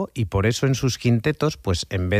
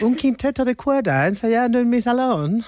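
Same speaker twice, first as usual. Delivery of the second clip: put-on high-pitched, sweet old English lady voice. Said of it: "¿Ese acento?".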